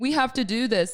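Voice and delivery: play-acted, worked-up, exhausted, high, upset insistence. Retelling a complaint to Fran at night, imitating being upset. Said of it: "I was so upset".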